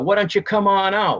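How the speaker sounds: loud, high yelling. Telling of being in the woods with a brother, retelling own yell. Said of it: "So I yell down in the woods".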